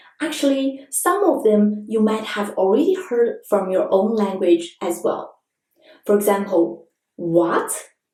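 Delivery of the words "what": "what" rising like Chinese second tone. Comparing a question word to the Chinese second tone, rising pitch on what. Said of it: "This wa is like the second tone in Chinese".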